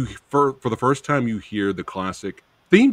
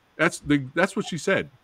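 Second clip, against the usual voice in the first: ordinary talk, nothing marked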